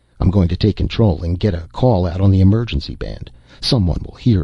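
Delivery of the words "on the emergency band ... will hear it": ordinary delivery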